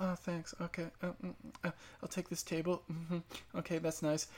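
very soft, delicate, polite put-on voice. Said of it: "Like [name] talk".

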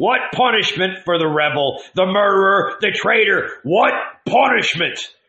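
high, bellowing, roaring voice. Narrating a man on horseback advancing toward the crowd: roaring. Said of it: "he roared".

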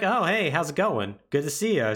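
put-on casual, unsurprised voice. Retelling a game scene, voicing Leon meeting Ada again: imitating unsurprised Leon. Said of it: "Leon is absolutely unsurprised".

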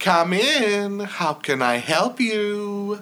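tiny, sweet, very high little voice. A storyteller voices whoever answers the door in the scene: sweet little voice. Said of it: "a sweet little voice comes".

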